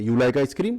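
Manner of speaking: statement tune rising like a question on "ice cream". Teaching spoken english questions without reordering words, rising question tune. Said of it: "spoken English में question की जो टोन आ जाती है इसमें".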